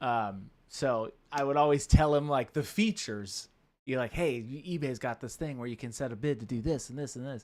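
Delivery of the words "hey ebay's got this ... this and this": pushy used car salesman sales-patter voice. Retelling explaining ebay features to a grandfather: imitating own used car salesman pitch. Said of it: "a used car salesman".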